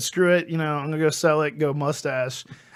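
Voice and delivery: plain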